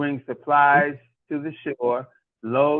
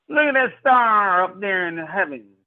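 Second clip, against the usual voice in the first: put-on, pitched-up country accent on every word; 5 semitones higher than usual. The speaker demonstrates how somebody would talk with a country accent. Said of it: "be somebody with a country accent".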